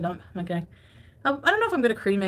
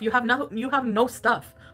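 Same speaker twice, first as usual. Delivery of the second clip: ordinary talk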